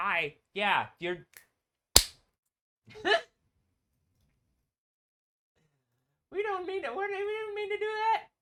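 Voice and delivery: very high, put-on cheery, sing-song niceness. Showing how a happy version of himself would talk instead of screaming: put-on happy version of himself. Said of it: "have a happy version of me".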